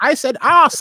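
high-pitched, loud, mock yelling.

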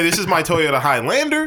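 Highlander rising at the end like a question. Speaker shows how they always say their car's name, rising on highlander like a question. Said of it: "I say it Highlander as a question every time. ... That's how I say it".

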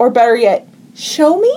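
put-on childlike, girlish little girl voice. Retelling what she said next after pitching an idea, in a little girl voice. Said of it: "In like a little girl voice".

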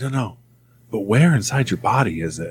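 put-on whisper imitating a man. Speaker retelling a man asking where the upset is felt, imitating Dale's whisper voice. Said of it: "he had this whisper voice".

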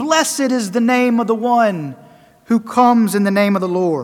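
usual speaking voice

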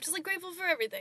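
very high voice, crying through the words. Thanking the others for a meaningful season, crying while talking. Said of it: "so I stop crying".

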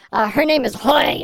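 put-on angry, weird voice. Telling the other speaker about the woman at the bead booth, imitating Hoip, mock-angry and weird. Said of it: "do you have to say it like you're angry and weird?".

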